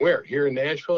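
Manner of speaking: ordinary talk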